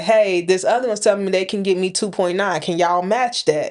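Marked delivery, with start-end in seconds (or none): none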